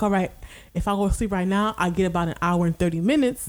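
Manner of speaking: ordinary delivery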